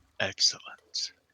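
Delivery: put-on very low-pitched voice. Narrating a scene to the group, a voice speaks in a very low voice. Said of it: "very low voice just says".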